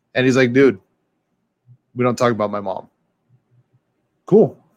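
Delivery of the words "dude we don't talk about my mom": mock-serious tone, much lower. Retelling how a buddy reacted to a yo mama joke, imitating him getting real serious. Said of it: "he got real serious".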